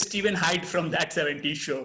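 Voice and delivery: ordinary talk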